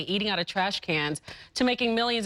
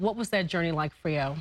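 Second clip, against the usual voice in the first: ordinary talk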